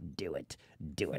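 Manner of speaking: slow, hushed whisper. A streamer reads out a chat viewer's message: Palpatine voice. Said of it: "in a Palpatine voice".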